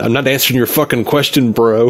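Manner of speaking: normal talking voice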